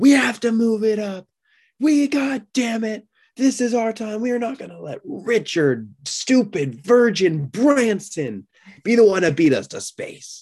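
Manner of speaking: mock shrill furious yelling, very high pitched. Imagine him so mad that he screams at everybody, as a Jeff Bezos impression, mock screaming. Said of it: "he's just screaming at everybody".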